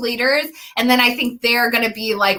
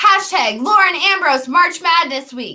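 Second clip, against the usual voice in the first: lively, forceful, vigorous and energetic delivery; 7 semitones higher, 3 dB louder than usual. Repeating a march madness week hashtag, this time: said with more vigor. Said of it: "let me say that with more vigor".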